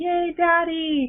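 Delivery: put-on high, slow, happy child's squeal.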